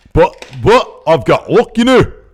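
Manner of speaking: put-on thick Scottish accent. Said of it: "that Scottish accent is thick there".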